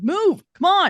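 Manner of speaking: very loud, very high, barked sharp delivery. Narrator voicing Derek of Warren's line, in Derek's barking voice. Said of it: "almost a bark of a voice".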